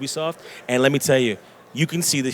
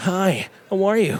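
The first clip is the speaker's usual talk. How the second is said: put-on anime character voice, high and drawn-out; 7 semitones higher than usual. Asked to voice act a little, the speaker demonstrates an anime voice. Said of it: "That's my anime voice".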